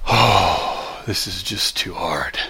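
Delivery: soft, very slow mutter under the breath. Retelling how someone behind on an assignment complained, imitating her under-breath mutter. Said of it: "I hear her under her breath say".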